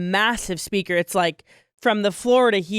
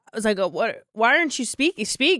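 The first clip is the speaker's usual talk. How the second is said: ordinary delivery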